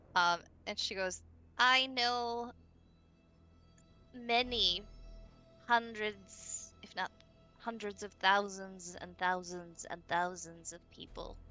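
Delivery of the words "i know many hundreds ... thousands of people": put-on old lady character voice. Voicing a grandmother speaking through a frog: voice of grandmother. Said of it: "talk with the voice of grandmother".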